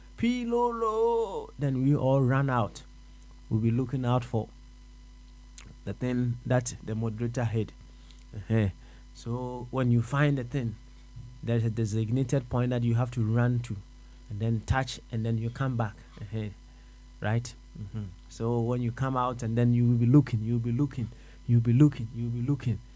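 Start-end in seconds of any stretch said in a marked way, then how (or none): 0.2-1.5 high, slow, drawn-out shout. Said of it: "then he shouts".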